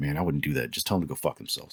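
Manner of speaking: hushed side-of-mouth whisper, lips barely moving. Retelling a piercer's advice given while walking past: imitating a side-of-mouth whisper. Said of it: "kinda whispered it out of the side of his mouth".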